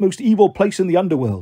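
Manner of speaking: ordinary delivery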